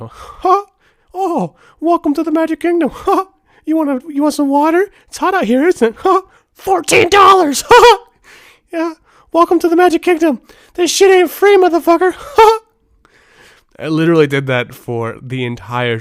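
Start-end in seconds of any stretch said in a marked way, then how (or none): 0.0-12.6 high-pitched, loud squeak. Recalling a trip where the speaker annoyed others by doing the Mickey Mouse voice. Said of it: "I kept doing the uh, the Mickey Mouse voice".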